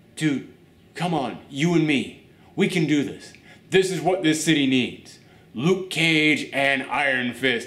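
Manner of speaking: plain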